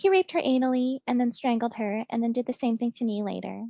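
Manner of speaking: put-on small, high, childlike baby voice. Retelling how a woman described traumatic events, mimicking a little baby voice. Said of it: "she's still talking in like a little baby voice".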